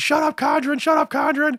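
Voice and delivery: play-acted, shrill, very high, repeated screaming. Retelling calling down the street to a friend: retelling own screaming. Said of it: "I'm screaming".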